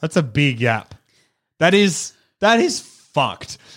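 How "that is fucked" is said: voice cracking and breaking, much higher. Hearing how big a statistical gap is, reacting with a voice crack. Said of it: "My voice just broke".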